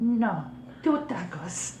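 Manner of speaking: put-on very high-pitched old-lady voice. Ordering at McDonald's in the Consuela old lady voice. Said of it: "confident to do the full voice".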